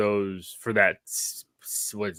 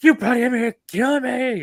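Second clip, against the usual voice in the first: very high, loud, shrieking scream; 6 dB louder than usual. Quoting a film scene to friends: imitating Anakin screaming. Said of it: "screaming and shouting".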